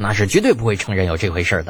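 ordinary delivery

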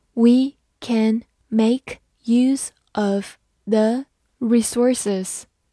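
slow, deliberate reading delivery.

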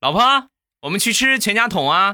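loud, very high calling shout. Retelling calling after the wife as she walked off, imitating his own loud shout. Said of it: "我在后边大声地喊道".

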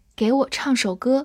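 ordinary delivery

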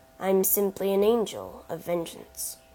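ordinary delivery

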